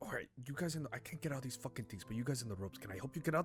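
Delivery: acted-out, put-on whisper. Recounting what they just whispered to someone, retelling a whisper. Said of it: "I just whispered to someone like".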